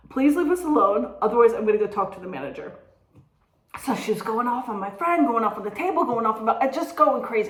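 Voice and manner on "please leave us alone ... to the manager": usual speaking voice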